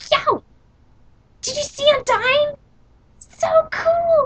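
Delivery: very high, slow, full fanboy voice. Describing a game character, imitating Jacksepticeye's Monster Kid voice. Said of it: "I like how Jacksepticeye does his voice".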